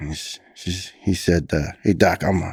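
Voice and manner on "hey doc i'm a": put-on heavy Brooklyn accent. Retelling a fireman's reply to his doctor: imitating a heavy brooklyn accent. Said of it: "he's got a heavy Brooklyn accent".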